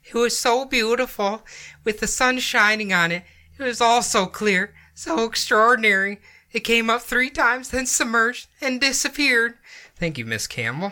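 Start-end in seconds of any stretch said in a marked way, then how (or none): 0.1-9.5 put-on teenage-boy voice, high, cracking and breaking mid-line. Reading a witness's report aloud in her voice: imitating Miss Campbell, cracking voice. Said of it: "you sound like a, uh, teenage boy going through puberty".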